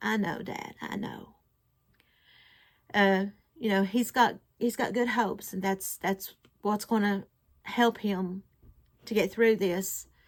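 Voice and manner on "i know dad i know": slow, play-acted voice breaking, barely a whisper. Recalling how he answered his dad, retelling a broken voice. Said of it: "I said in a broken voice".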